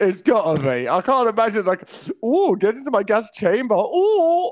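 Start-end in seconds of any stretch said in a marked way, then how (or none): 2.2-3.7 theatrical, campy, flamboyant villain voice. Joking that scary movie figures are also camp, camp villain voice. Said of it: "They're camp at the same".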